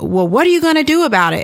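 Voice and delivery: angry, confrontational, high and fast.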